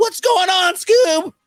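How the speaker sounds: very high, loud, easy, carefree slacker voice. A speaker compares how he voices Shaggy and Morty, doing the Shaggy voice.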